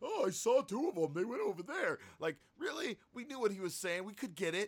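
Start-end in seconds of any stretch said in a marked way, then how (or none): 0.0-2.0 dumb, silly, stupid alien voice. Complaining about an alien in Star Wars: The Last Jedi, stupid alien voice. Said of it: "he had such a stupid voice".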